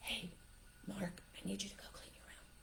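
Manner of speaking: soft, hushed, very quiet whisper. Getting on someone's eye level with eye contact to ask them something, whisper. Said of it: "you whisper".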